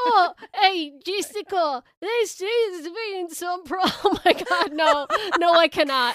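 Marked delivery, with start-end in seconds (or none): 0.0-3.9 put-on Australian accent, higher and louder. Asked to add an Australian accent, speaker tries a Vincent Price voice, Australian accent. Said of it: "Can you add an Australian accent".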